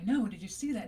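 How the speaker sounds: "I know" said with an agreeing intonation. Language lesson on the meanings of I know, said in agreeing intonation. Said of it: "in an agreeing intonation".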